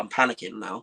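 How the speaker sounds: ordinary delivery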